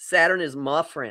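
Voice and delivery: slow, drawling Texas accent. Repeating "saturn is my friend" in a texas accent. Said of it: "you got to do it with the Texas accent".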